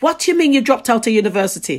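put-on strong Jamaican accent. Retelling their mum's reaction to leaving uni, in the strongest jamaican accent. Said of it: "my mum says in the strongest Jamaican accent".

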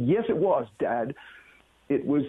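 normal talking voice

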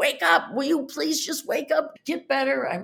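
wild frantic yelling. Recalling going in there every day, the speaker acts out their own yelling. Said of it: "I'm screaming and yelling".

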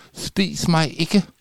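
frightened hissing snake voice, very high pitch. Reading a story aloud, the snake speaks to Alexandra: scared hissing snake. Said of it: "vislede slangen bange".

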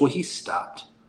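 put-on offhand, nonchalant kid voice. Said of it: "just nonchalant".

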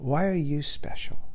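soft, close, confiding, intimate voice. Addressing someone directly, asking the question in an intimate way. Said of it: "And I say that in an intimate way".

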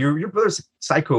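normal talking voice

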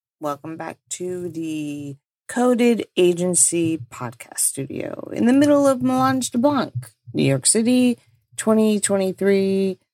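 polished, professional radio announcer voice. A wedding podcast host opening an episode, in a professional-sounding voice. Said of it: "That sounded way more professional".

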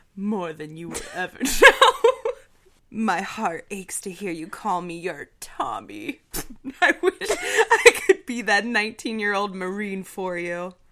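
booming from the chest with swooping pitch. Acting out a scene with a partner, voicing Tom in a manly voice. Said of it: "Marine Sniper manly voice?".

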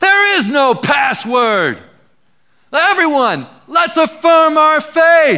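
very high, ringing, drawn-out yell rising upward. Telling a story, voicing a believer yelling up at the demons: retelling a yell. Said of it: "yells up and says".

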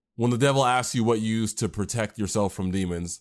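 plain

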